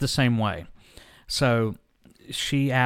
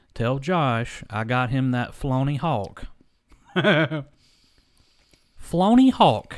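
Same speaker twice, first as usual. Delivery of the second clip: slow, drawn-out, put-on country accent. Imitating a woman talking to his mom on speakerphone, slow, country-sounding voice. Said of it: "Real slow voice".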